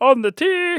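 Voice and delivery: very high, squeaky cartoon sidekick voice. Speakers take turns saying a golf phrase: Minion-like voice. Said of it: "that sounded a bit like Minions".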